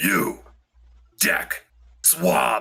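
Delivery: low half-orc character voice. Voicing a half-orc first mate ordering a crewman to swab: Braun the half-orc first mate voice. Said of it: "he literally walks over with a bucket and mop and goes".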